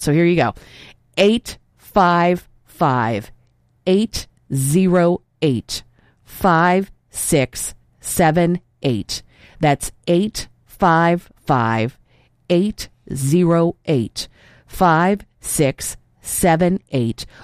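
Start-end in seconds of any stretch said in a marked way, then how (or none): 1.2-17.2 very slow, as slowly as possible. Speaker gives the donation phone number to listeners, very slow. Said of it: "I will say it as slowly as I possibly can".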